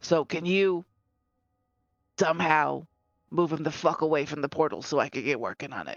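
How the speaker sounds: speaking in a whisper. Whispering a plan to Stormbringer so another character won't hear: whispering. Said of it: "I'm going to whisper".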